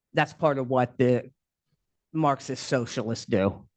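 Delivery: thick, dripping, very sarcastic delivery. Making a pointed remark to the listeners: very sarcastic. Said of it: "I'm being very sarcastic".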